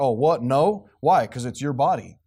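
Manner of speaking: mock snide, heavily sarcastic tone. Imitating how they reply to the speaker's proposal, real sarcastic. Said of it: "And then they're like real sarcastic".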